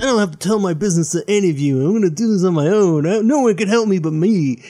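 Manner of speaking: put-on petulant, sulky teenager voice. Describing how Batman sometimes talks, quoting him as mock-petulant teenage Batman. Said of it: "he sounds like a petulant teenager".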